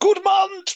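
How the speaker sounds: play-acted villain hollering, very high. Imagining an edited version where the villain shouts at his followers: imitating a villain shouting. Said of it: "he just shouts at his followers".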